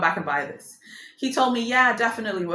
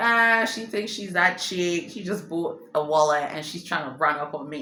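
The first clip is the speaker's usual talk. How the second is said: plain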